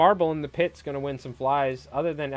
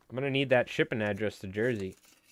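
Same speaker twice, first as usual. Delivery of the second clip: ordinary delivery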